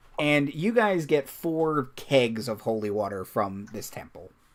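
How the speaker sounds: ordinary delivery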